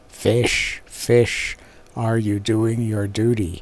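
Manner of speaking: dreadful, fearsome, terrible voice. Touching the fish with a stick, a figure questions them in a terrible voice. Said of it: "He was very tall, and carried a large green stick with which he touched the fish, saying in a terrible voice".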